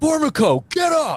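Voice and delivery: put-on very high, shrill drill-sergeant scream at full lungs. Retelling how a skinny guy screamed at a kid: retelling a scream. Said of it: "would scream at the top of his lungs".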